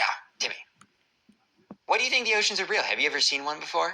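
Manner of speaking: very high-pitched, put-on cartoon voice. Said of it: "I'm doing my Cartman voice".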